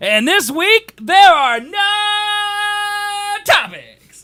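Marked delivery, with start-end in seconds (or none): 1.0-4.2 very slow, very high, long drawn-out no. Announcing there are no topics this week: drawn-out no. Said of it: "I drew out no so long".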